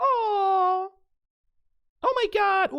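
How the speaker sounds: put-on gushing, swooning girl voice, very high, loud, drawn out. Talking about flowers, the speaker acts out the woman swooning: put-on swooning girl voice. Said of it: "I have my girl voice back".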